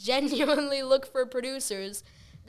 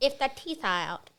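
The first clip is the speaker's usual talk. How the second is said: voice talking with teeth sticking out; 2 semitones higher than usual. Explaining how teeth change a voice, demonstrating talking with teeth out. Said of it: "they talk like this".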